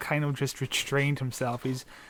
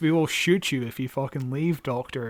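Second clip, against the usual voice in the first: usual speaking voice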